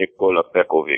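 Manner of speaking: put-on Russian accent. Showing another speaker how the name should be said, in a russian accent. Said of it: "You gotta say it like with a Russian accent".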